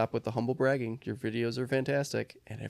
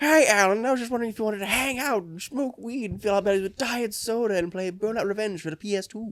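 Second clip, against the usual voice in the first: goofy, silly, high-pitched cartoon character voice; 8 semitones higher than usual. Podcaster quoting a line from the show, in a Smiling Friends character voice. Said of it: "We're just gonna make silly voices".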